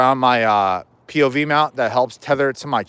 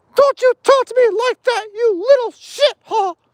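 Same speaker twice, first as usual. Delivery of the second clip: squeaky, high-pitched voice; 3 dB louder than usual. Quoting a South Park scene where Mickey Mouse beats up a band: South Park Mickey Mouse impression. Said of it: "impersonate Mickey Mouse from South Park".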